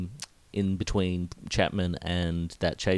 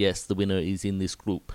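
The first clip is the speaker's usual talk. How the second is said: put-on speaking with a Dutch accent. Quoting the DS whose car the speaker rode in, put-on Dutch accent. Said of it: "that's my Dutch accent".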